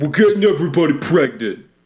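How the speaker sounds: loud, high-pitched, weird voice. Quoting a Jay Moore bit about pregnancy: Tracy Morgan impression. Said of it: "it's his Tracy Morgan impersonation".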